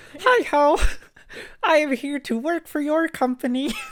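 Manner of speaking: very high cartoon frog puppet voice. Joking about using a fake voice in a job interview, in a Kermit the Frog voice. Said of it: "can't believe we have Kermit".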